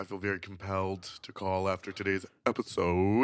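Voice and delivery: deliberately deepened, soft, sexy put-on voice. Reading out a listener's voicemail, the host repeats it in a mock deep voice. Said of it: "Deep deep voice".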